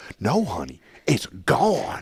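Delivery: mock, very slow, drawn-out emotional delivery, swooping. Imitating a man in a supplement commercial: imitating his emotional line. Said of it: "that's how he says it".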